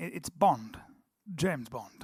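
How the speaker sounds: proper English accent throughout. Showing the other speaker how to say it: James Bond in English accent. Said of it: "you're going Bond".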